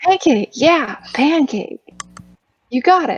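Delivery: gentle, high, soothing pet-talk voice. Soothing a kobold in the dark while feeding it: voice for talking to a small animal. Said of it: "I'm talking to a small animal voice".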